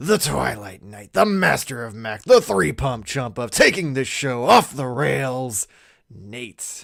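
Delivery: very loud, booming, belted-out hype delivery. Introducing co-hosts with grand titles: Macho Man voice. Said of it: "your Macho Man voice".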